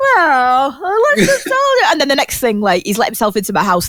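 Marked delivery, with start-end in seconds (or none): 0.0-1.9 "well" stretched out, high and slow. Acting out a dad who offers to fix a broken camera: imitating my dad. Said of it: "He'd be like".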